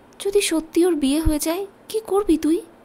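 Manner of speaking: dreamy, spellbound tone. Reading a story, a ghost girl questions her killer: entranced voice. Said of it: "নয়নতারা আবেশিত গলায় বলল".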